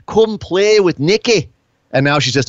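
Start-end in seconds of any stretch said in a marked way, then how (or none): 0.2-1.5 unhinged, high-pitched, slightly crazy wrestler voice. Speaker contrasts Nikki Cross's old persona, doing a crazy Nikki Cross impression. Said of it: "she used to be crazy".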